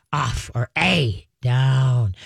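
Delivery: deepened, deep, very slow, drawn-out voice. Demonstrating the commands to give a jumping dog, in a deepened voice. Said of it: "you deepen your voice".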